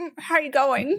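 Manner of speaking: normal talking voice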